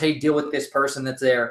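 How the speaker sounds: usual speaking voice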